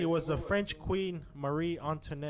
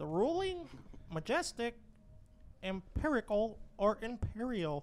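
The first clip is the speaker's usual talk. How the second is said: high put-on character voice, pitched up; 6 semitones higher than usual. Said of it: "the fucking Dexter voice".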